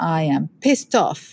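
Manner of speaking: usual speaking voice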